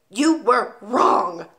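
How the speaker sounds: barking, sharp delivery. Reading a story aloud, as the Trunchbull answering the boy: barking. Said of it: "the Trunchbull barked".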